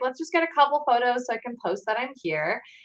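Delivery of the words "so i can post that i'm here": normal talking voice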